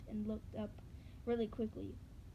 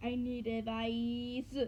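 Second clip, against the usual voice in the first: slow, each word stretched, "advice" longest; 5 dB louder than usual. Reading a story aloud, a character's line slowly drawn out. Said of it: "as she drew out her words, making it sound like".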